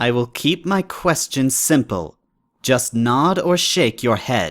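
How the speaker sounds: guarded, wary princess voice with a steely edge. Narrator voices the wary Princess of the Night questioning him, with a hint of steel in her voice. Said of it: "he risked a glance back and yelped in fright when he saw the Princess of the Night barely a tail length behind / She was standing completely still. / Calm yourself and show some courage, [name] intone".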